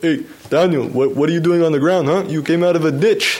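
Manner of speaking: terrible put-on Belgian accent. A cyclist retells his director finding him on the ground, terrible Belgian accent. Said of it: "probably my terrible Belgian accent".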